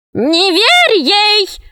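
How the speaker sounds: very high, shrill, shrieking witch cry. Narrator reads a witch calling out to a dragon, shouted. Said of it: "закричала ведьма".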